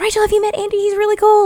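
put-on high-pitched twelve-year-old voice.

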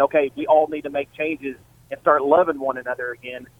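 ordinary talk, nothing marked

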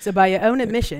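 put-on New Zealand accent. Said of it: "don't do it with Ray Comfort's accent".

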